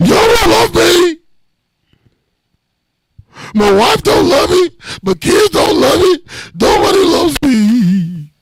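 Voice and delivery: put-on very high, teary drunken self-pity, "me" drawn out. Teasing a friend about his drunken call, imitating him drunk and crying. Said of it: "listen to yourself drunk".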